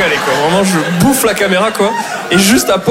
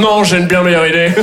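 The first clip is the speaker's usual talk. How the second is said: plain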